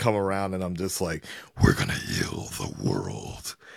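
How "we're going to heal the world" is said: very low, deep, rough monster voice. Speaker recounts talking to people at a Spider-Man trailer, in a Venom voice. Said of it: "That was a crazy Venom voice".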